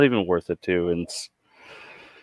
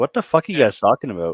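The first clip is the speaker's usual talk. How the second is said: ordinary talk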